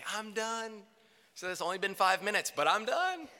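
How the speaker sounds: put-on bright, high, joyous and cheerful declaring voice. Retelling announcing to mom that the room was done, so joyously. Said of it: "so joyously say".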